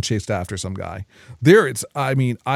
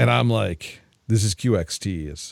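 ordinary talk

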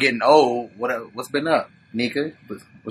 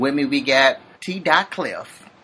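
usual speaking voice

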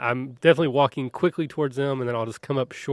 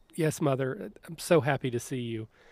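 put-on broken voice, fighting back tears; 6 dB quieter than usual. Retelling how Army greeted her mother, imitating Army's squeaky, broken voice. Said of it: "says in almost like a squeaky, broken voice".

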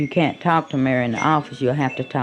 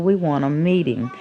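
ordinary talk

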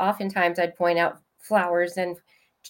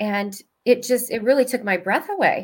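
ordinary talk

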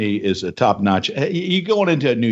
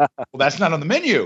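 put-on flustered voice, higher pitch; 3 semitones higher than usual. Retelling a waiter's answer to an unusual order: imitating a flustered waiter. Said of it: "the waiter gets all bumfuzzled and flustered and says".

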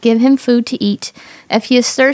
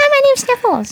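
very high, fast, cute voice, rattled off; 13 semitones higher than usual. Telling others about a cartoon figure with the cutest voice, fast Sniffles voice. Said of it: "He talks like 100 miles an hour".

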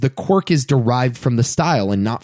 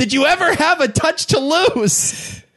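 acted-out very high, stretched, drawn-out scream. Retelling a funny scene where a shot man screams a question, retelling a scream. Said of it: "He just screams".

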